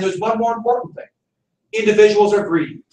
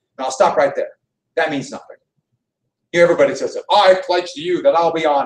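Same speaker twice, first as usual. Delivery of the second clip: ordinary talk, nothing marked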